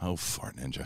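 offhand, casual, throwaway delivery. Retelling what was said mid-conversation: in that Dan Merle way. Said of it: "In that Dan Merle way".

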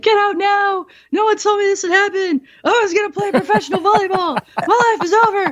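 very high sobbing, screaming wail. Retelling being wheeled down the hallway: acting out own crying and screaming. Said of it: "I'm like crying and screaming".

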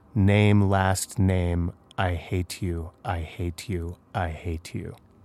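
slow, deep, rasping woman's voice. Reading a Redditor's account of a voice at night: feminine but deep and raspy voice. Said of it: "a feminine but deep and raspy voice said".

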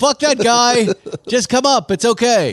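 very high-pitched, yelled-out call. Retelling yelling out at the guy in the acid green GT3; retelling a yell. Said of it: "And I yelled out".

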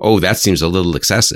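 ordinary delivery

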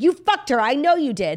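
put-on high, loud, drunk, accusing yell. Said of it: "when she was like".

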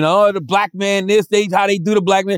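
mock high-pitched screaming, complaining tone. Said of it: "he gonna be screaming".

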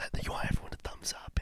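soft whisper without breathiness.

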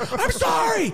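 mock scream, very high-pitched. Retelling passing someone on the highway shoulder, quoting what you screamed; retelling a scream. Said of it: "I even screamed".

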